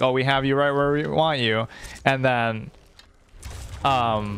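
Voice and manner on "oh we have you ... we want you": normal talking voice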